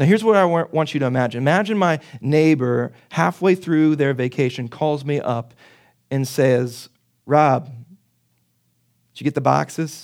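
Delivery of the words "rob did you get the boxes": put-on drawn-out, very slow Pittsburgh accent. Imagining a neighbor phoning mid-vacation, in a Pittsburgh accent. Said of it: "It's my Pittsburgh accent".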